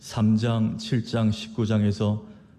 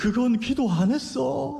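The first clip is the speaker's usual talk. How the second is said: put-on very high, drawn-out, slow sobbing plea; 13 semitones higher than usual. A parent retells their child's tearful reply to them, imitating a child crying. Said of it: "얘가 막 울면서".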